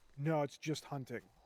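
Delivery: really annoyed, irritated, fed-up tone. Retelling what a guy said when they came up: imitating a really annoyed tone. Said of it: "in, like, a really annoyed tone".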